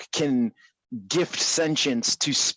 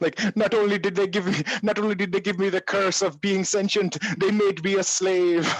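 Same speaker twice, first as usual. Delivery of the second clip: horrible, high, put-on Jamaican accent; 7 semitones higher than usual. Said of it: "my Jamaican accent is horrible".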